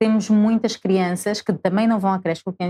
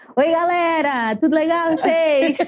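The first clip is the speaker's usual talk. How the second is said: put-on Brazilian Portuguese accent throughout, pitched up; 9 semitones higher than usual. Speaker acting out how a boy who imitates everything talks, imitating a Brazilian accent. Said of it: "Mas com sotaque?".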